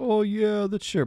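voice pushed very high, very high-pitched. Retelling a movie scene, answering a plea to come over: David Schwimmer impression. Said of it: "I'm impersonating David Schwimmer".

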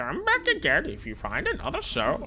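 very high, lilting, swooping put-on sing-song voice. While playing, mocking the person he is talking to, impersonating WarnFX. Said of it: "That's my impersonation of you".

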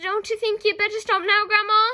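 very high, very loud, high-pitched shout. George calls up to grandma, whose head is through the roof, calling up. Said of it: "George called up".

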